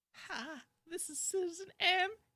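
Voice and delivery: very high-pitched voice. Doing an impression when asked to: Citizen M impression. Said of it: "Try to do a Citizen M impression".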